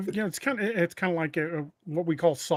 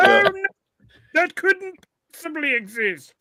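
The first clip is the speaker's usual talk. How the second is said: very high, loud, squealing museum-man voice; 13 semitones higher, 10 dB louder than usual. Prompted by another speaker, he does his impression of the British Museum guy. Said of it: "you do your impression of the guy from the British Museum".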